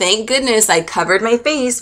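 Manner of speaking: usual speaking voice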